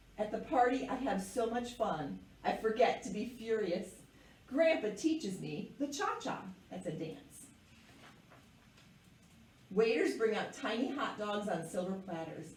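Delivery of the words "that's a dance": soft, whispered aside. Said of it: "aside explaining word".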